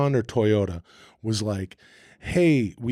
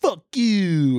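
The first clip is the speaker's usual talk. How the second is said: angry, irritated character voice, higher pitch; 8 semitones higher than usual. Showing an old comedy character, a pissy hater: pissy hater character voice. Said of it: "this pissy guy".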